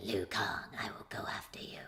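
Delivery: raspy, breathy, creepy voice in a whisper. Describing a film character's lines, imitating her: raspy creepy Mileena voice. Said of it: "she's got this raspy".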